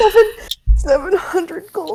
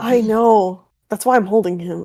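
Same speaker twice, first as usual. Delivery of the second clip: hushed whisper, lower; 10 semitones lower than usual. Playing a character answering a companion quietly: whispering. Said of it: "Sterling kinda whispers over to Zoe".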